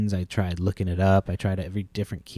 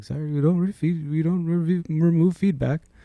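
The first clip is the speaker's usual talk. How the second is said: deliberately bad put-on Indian accent, pitched up; 9 semitones higher than usual. Imitating an unhelpful worker in India: bad Indian accent. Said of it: "I was trying to do a bad Indian accent".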